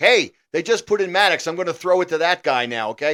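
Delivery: high, loud yelling. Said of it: "he yelled at the coach".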